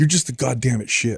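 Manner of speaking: mock angry muttering. Retelling how an angry three-year-old cursed while walking off: imitating an angry mutter under his breath. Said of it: "I hear him under his breath".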